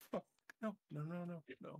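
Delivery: frantic, panicked, barely-there half-whisper. Voicing Jesse, who is behind you with her camera: panicked half-whisper. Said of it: "You hear Jesse whispering like".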